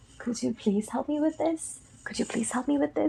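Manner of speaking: courteous, very polite, soft and quick. Teaching English practice lines, demonstrating a character's line in a polite tone. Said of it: "बहुत ही polite वे से कहा".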